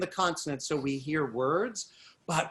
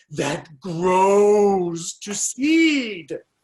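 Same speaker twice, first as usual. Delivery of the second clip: hard, stretched vowels in grows and seed; 3 semitones higher, 9 dB louder than usual. Showing how to read a sample line with emphasized vowel sounds. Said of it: "I'm trying to emphasize the vowel sounds".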